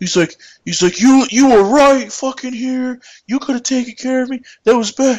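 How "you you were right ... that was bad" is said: put-on heated, high, angry yelling rant. Retelling a guy who yelled at him while he was taking tickets, imitating the yelling. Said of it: "this guy just starts yelling at me".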